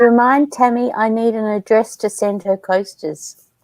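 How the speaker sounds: plain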